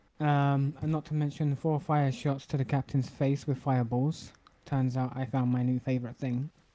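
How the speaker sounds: normal talking voice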